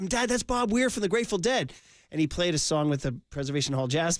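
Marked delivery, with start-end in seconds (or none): 0.1-1.7 high-pitched, loud, shouted call-out. Retelling answering a father at a packed show: retelling own past yell. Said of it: "and I'm yelling".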